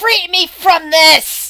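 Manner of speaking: very loud, high dragon cry. A narrator voices a dragon's yell heard by the listeners: draconic yell. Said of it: "draconic yell that the people who understand draconic s- sa- says like".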